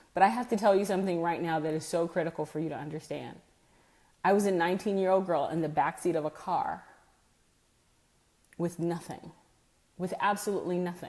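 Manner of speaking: choked-up voice catching with emotion. Speaker addressing listeners, moved by remembering: choked up. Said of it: "I'm getting a little choked up about this".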